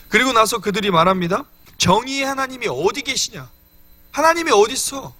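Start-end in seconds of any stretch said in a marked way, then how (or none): 1.7-5.0 higher-pitched demanding, challenging tone. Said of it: "라고 따지고 있는 겁니다".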